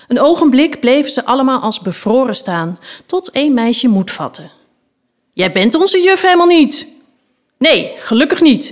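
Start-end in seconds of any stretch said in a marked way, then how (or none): 7.5-8.7 calling, crying out aloud. The knight answers a defiant girl, calling out. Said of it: "riep de ritster".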